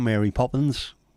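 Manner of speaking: put-on London Cockney accent. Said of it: "his accent's fantastic, and he was like".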